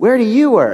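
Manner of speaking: put-on high, loud clueless teen voice. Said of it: "then she says to me".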